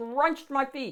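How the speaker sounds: plain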